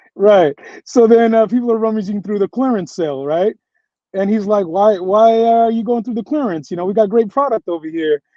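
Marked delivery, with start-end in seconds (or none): 4.7-8.2 put-on New York accent, much higher pitch. Retelling a store owner calling shoppers away from the clearance sale, imitating a New York accent. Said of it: "And he's got a New York accent".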